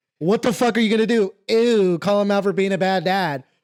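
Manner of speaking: scoffing, mocking, jeering voice. Reading a take word for word, the speaker imitates Oscar's mocking voice. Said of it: "You use that voice like mocking him".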